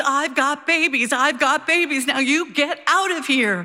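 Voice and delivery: shrill, high screaming. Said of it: "she screams".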